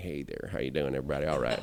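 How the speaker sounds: low, relaxed, laid-back voice, dropped low. Sitting back while speaking on stage, greet everybody, sounding a little like Matthew McConaughey. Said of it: "start to sound a little bit like".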